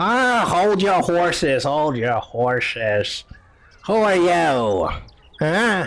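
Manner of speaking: put-on very slow old crone voice. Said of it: "this old lady comes out".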